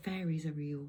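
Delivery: ordinary delivery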